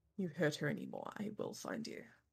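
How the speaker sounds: hushed, barely voiced, low mutter under the breath. Hikari, handing Rosa over, warns the one taking her, under her breath. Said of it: "very under her breath goes".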